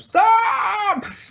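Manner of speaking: high, loud panicked scream on the word stop.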